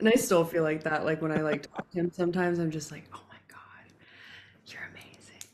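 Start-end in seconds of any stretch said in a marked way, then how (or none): 3.1-5.4 breathy, awestruck, gushing whisper. Retelling talking to a musician she admires: imitating own whisper. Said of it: "Always, always in a whisper".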